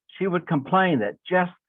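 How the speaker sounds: plain reading voice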